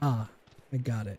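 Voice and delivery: flat, expressionless deadpan with zero emotion. Retelling own calm reaction to finally catching a favorite Pokemon: imitating own deadpan reaction. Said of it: "Literally just no expression, no emotion".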